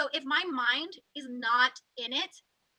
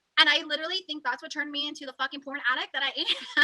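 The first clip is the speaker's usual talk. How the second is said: plain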